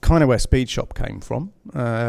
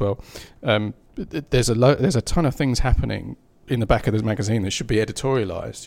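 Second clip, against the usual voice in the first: usual speaking voice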